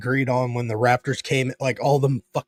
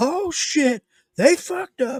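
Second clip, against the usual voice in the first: put-on very high cry, stretched slow and drawn out. Retelling yelling out in a movie theater: retelling own yell. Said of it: "I yelled out".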